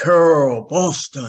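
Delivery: loud, booming call carrying across a room. Walking into a room as a man announces her name: imitating Barry's booming call. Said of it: "this booming voice comes across and he goes".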